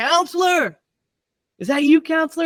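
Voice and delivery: acted-out very high yelled shout. Retelling a film scene where a character yells at the counselor: imitating someone yelling. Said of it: "he's yelling at him".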